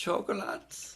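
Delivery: breathy put-on German accent. Saying one word to show how great it sounds: German accent. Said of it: "some words are so great in a German accent".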